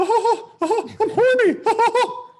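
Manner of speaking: squeaked high, loud and slow. Speaker retells what a man would say when the club showed up: Mickey Mouse voice. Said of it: "did a good Mickey Mouse impression".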